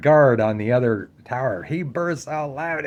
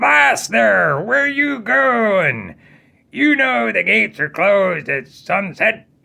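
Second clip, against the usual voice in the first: put-on pitched-up old pirate voice calling down; 6 semitones higher than usual. Telling a story, voicing the pirate on top of the tower: old pirate voice. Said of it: "this old pirate there".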